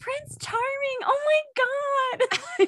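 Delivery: very high-pitched, stretched-out, drawn-out yelling. Recalling a fun night out, retelling a yell at someone. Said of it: "I'm like yelling at Will".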